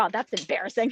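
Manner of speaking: usual speaking voice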